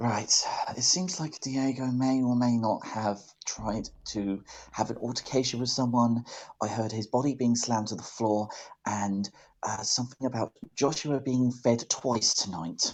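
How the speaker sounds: whispering. A player character reports what they overheard to the others, whispering. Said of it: "I'm going to be whispering".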